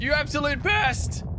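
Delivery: exasperated outburst, high and slow.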